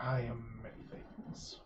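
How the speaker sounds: deep, rough, low, gravelly, hushed voice. Storyteller voicing a figure's reply to a player: low, gravelly voice. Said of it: "In a low, gravelly voice, he says".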